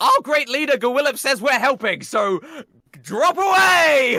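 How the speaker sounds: very high, loud call, drawn out and stretching away. Calling over to Pizza Pete in character during the fight: in-character yell. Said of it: "I yell over to Pizza Pete".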